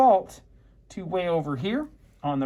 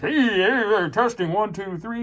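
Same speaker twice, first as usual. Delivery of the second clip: big sound guy voice, drawn-out hey. Instructor doing a mic check aiming for minus eighteen, big sound guy voice. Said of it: "big sound guy voice".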